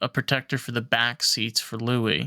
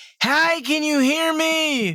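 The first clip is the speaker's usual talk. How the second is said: screaming, pitched higher and louder; 4 dB louder than usual. Retelling a call from a loud convertible: imitating own screaming at phone. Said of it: "screaming at my phone".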